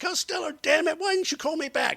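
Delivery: very high, shrill, enraged woman's outburst. Retelling angry phone calls from women to the radio station, imitating an enraged woman. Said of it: "phone calls from enraged women".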